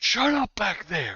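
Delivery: very high-pitched, loud shouting. Narrating a scene, voicing a voice from the front room: shouting. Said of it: "hear a voice shout".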